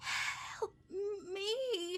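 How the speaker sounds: very high, strained, very raspy voice. A pale man bleeding out sits up and looks at you, very raspy voice. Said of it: "through a very raspy voice goes".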